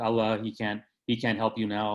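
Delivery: plain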